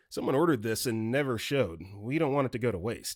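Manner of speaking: plain reading voice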